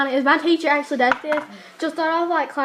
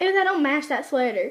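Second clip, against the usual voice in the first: ordinary talk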